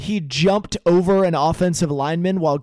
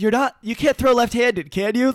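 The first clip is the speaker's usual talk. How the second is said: hopeful, pitched-up pleading, high and full of hope; 6 semitones higher than usual. Retelling a player asking the injured quarterback a question: imitating hopeful George Kittle. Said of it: "just so hopeful".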